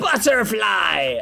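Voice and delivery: tough, hardcore delivery. Comparing words for butterfly across languages, saying it in a hardcore tone. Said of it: "you can make anything sound hardcore if you put a tone on it".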